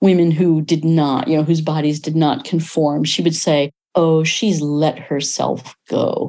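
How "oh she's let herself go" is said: put-on grandmother voice, slow, heavy with disapproving judgment. Quoting a grandmother's old phrase about women, imitating a judgmental grandmother. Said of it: "Always said in a voice dripping with judgment".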